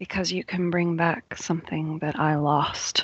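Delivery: grave, solemn tone with a strangely angry edge. Voicing a spirit answering the pack: solemn and strangely angry voice. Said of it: "Says a very solemn and strangely angry voice".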